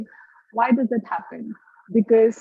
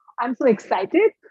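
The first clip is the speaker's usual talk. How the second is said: rising upspeak tune at the end on excited. Warning against upspeak with an example sentence: rising pitch on excited. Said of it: "Now it becomes a question mark".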